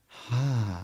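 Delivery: slow, seductive, sultry, drawn-out delivery. Replaying a patient's answering machine greeting for coworkers: imitating a sultry voice. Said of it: "Please stop making that voice".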